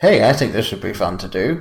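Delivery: ordinary delivery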